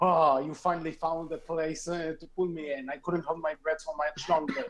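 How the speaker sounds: ordinary delivery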